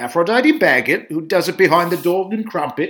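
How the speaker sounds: put-on British accent. Quoting Shakespeare in Love, voicing Geoffrey Rush's producer in a horrible British accent. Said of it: "Forgive my horrible British accent".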